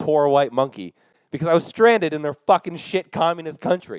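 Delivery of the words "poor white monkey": usual speaking voice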